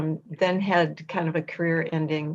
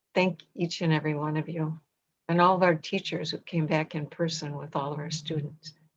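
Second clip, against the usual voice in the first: choked-up voice, catching with emotion; 4 dB quieter than usual. A speaker thanking teachers and families, a little choked up. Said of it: "I'm just a little choked up".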